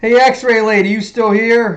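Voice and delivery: high voice calling out into the distance. Calling out to someone nicknamed x-ray lady to check she's there, shouting. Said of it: "I don't know why I'm shouting".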